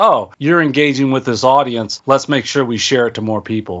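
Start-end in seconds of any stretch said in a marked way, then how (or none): none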